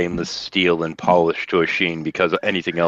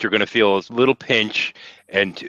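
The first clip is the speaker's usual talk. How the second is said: ordinary delivery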